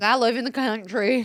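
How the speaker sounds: put-on Southern accent. Speakers take turns mocking Lucy Gray; this one does a Lucy Gray Southern accent. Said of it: "When did we get Southern accents".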